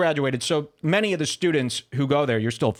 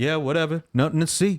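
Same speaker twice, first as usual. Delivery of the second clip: mocking put-on thug voice. Mocking the guest's way of talking: imitating a thug accent. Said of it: "You're like".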